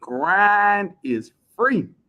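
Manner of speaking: each word drawn out, slow and deliberate. Repeating an inspirational phrase for the chat: said slowly. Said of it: "I'ma say it slow".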